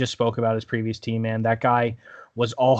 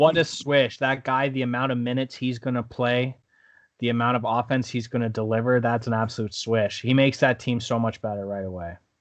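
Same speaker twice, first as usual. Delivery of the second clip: ordinary delivery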